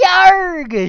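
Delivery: very high, very loud, drawn-out shrill female voice. Voicing a captain character crying out: female tone. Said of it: "she says in a female tone".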